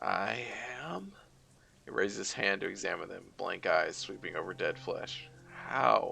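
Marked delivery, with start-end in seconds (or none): 0.0-1.1 faint, soft, hushed, echoing ghostly voice. A narrator voices a newly dead spirit answering the one who found it, soft echoing spirit voice. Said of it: "A soft voice echoes out from deep inside".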